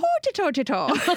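put-on Irish accent. Showing the phrase used to warm up an irish accent. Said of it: "I have to do an Irish accent".

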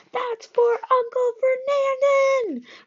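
very high, drawn-out, yelling voice. Narrator reads a satyr shouting back at a foe mid-fight, yelling back. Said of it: "Grover yelled back".

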